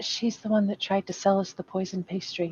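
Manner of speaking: hushed, quiet whisper. Warning a companion in character about the pastry seller: whispering. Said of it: "tug on Matthew's sleeve and whisper in his ear".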